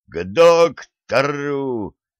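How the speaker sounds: yelling at full voice. The first mate gives an order, yelling at full voice. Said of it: "заорал полной грудью старпом".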